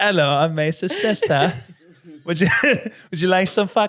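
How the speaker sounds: fake British accent, high and loud. Told to go straight into it, speaker redoes an introduction in a British accent. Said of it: "that's where I should have done a British accent".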